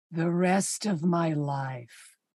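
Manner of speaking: low, slow, lovestruck romantic hero voice.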